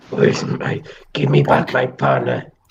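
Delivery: put-on accent, faintly Mexican. Speaker performs a line again for the group, slightly Mexican-sounding accent. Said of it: "Peep's version sounded a bit Mexican".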